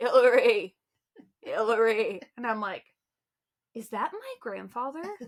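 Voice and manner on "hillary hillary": put-on raised, calling, little old Maine accent. Recalling an old man calling out to her in gym class, old Maine accent. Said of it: "this little old Maine accent go".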